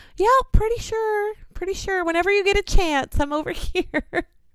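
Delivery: giddy, giggly, called out high.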